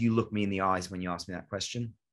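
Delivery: plain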